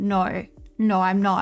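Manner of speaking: put-on dead-level, very drawn-out, flat deadpan. Retelling the ID checker refusing to card the friends: imitating a deadpan voice. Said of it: "in this like deadpan voice goes".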